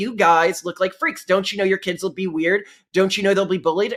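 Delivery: ordinary delivery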